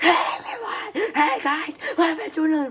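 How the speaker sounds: very high-pitched, very loud, ear-splitting shrill voice. Mocking how a video host greets viewers: imitating an ear-splitting loud greeting. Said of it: "you're trying to burst my ears open?".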